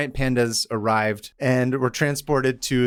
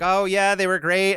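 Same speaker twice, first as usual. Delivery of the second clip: pitched-up, breezy, simple delivery; 7 semitones higher than usual. Retelling a phone call from the Nixon tapes: bad Pat Nixon impression. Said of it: "I can't do a Pat Nixon impression".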